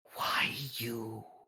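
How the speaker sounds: unsettling, creepy, eerie, spooky voice. Voicing a voice heard behind a character in the dark: creepy voice. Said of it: "I just hear creepiness".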